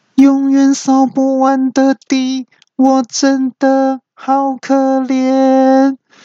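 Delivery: very high, slow, flat, drawn-out robot whine. Retelling the robot vacuum grumbling while cleaning: imitating it complaining. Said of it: "又开始抱怨".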